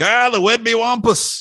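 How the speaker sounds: put-on, very high, dripping with sarcasm. Recalling weird animal tracks seen in the sand, retelling a sarcastic remark. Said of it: "I very sarcastically was like".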